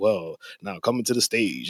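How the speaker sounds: emcee-style stage announcer voice. Retelling own practice a couple days before the intro: announcer voice. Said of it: "Definitely have an announcer voice".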